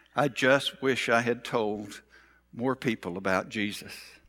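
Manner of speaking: very low, faint, weak and subdued voice. Retelling a woman's last words as she said them, imitating her weak, subdued voice. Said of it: "in her weak, subdued voice".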